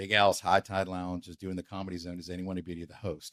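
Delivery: plain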